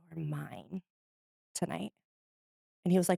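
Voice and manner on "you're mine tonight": very soft hushed half-whisper, close to the ear. Speaker acts out what they half-whispered in a man's ear, half-whispering in his ear. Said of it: "whispering in his ear".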